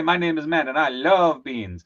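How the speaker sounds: love stressed, slowed and leaned on. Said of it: "No, no, no, you say".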